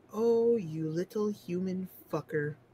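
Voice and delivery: proper, ladylike feminine voice. Game master voicing someone in heels who appears behind the player, talking like a lady. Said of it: "Why are you talking like a lady?".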